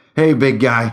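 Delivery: squeaky, nervous voice, losing nerve. Narrator reads a character poking a giant in the ribs, squeaky, losing his nerve. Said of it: "he squeaked, losing his nerve".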